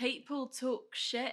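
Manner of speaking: Australian-sounding accent. Asked to say it in an Irish accent, speaker's try comes out Australian-sounding. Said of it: "That's like Australian".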